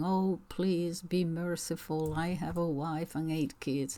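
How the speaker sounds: ordinary talk, nothing marked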